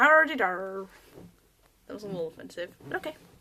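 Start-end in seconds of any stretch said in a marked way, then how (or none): 0.0-0.9 loud, put-on Southern accent. Showing how they slip into talking differently, in a put-on Southern accent. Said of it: "I tend to kind of go like southern".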